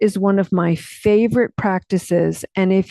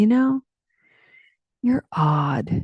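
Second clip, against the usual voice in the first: mock tender, affectionate, loving delivery. Speaker retells what their dad said to them years ago, lovingly quoting dad. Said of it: "he said very lovingly".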